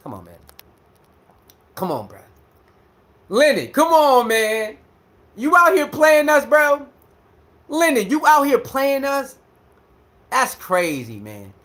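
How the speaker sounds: worked up, agitated, upset, swooping rising pitch. Speaker complaining about someone's videos and getting worked up, upset. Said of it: "I'm getting upset".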